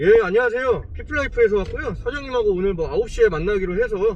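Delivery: loud, confident, self-assured delivery. Showing how he greets staff when visiting a company: confident. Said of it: "자신있게 얘기합니다".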